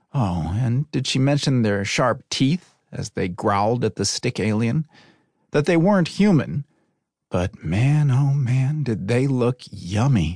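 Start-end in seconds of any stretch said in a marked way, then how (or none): 7.3-10.4 slow, dreamy, lost-in-thought musing. In a read story, a woman thinks to herself, dreamy. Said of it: "Riley thought dreamily".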